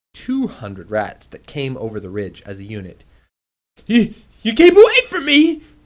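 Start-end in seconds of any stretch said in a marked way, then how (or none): 3.9-5.6 shrill, booming, hollow, very loud, high shout. He faces two hundred rats inching closer, shouting. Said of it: "he shouted as the rats inched closer".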